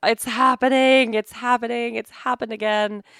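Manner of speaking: yelling out in shock. Retelling a moment when the back snapped: imitating own past yelling. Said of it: "yelling at Dennis".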